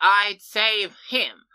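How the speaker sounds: loud, high-pitched, heroic proclaiming voice. Retelling a scene where Alex grabs the shield: Alex's heroic tone. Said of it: "says in a much more heroic tone".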